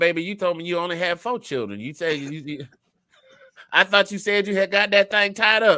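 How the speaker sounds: motherly voice laid on big, loud and high. Retelling his mama calling him about a check: imitating his mother, Madea-like voice. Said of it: "it sounds a lot better when I do it like this".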